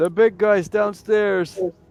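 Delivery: shrill, high, loud shouted yell. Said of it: "So I yell out to the two guys outside".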